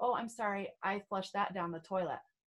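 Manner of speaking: plain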